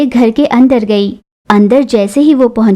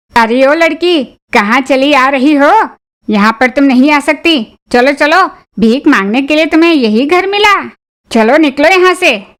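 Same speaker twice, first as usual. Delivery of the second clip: irate, angry voice; 3 semitones higher than usual. Voicing a watchman driving a girl away from the gate: shouting angrily. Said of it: "watchman की चिल्लाने की आवाज".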